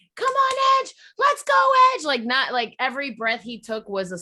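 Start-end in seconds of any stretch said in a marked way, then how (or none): 0.2-2.1 shrill, booming, high full-chest nonstop screaming. Retelling a nineteen-year-old who screamed the whole time, imitating his screaming. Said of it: "the whole time was just screaming".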